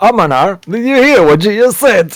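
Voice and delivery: guard voice, laughing while talking. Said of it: "a few guards start to laugh".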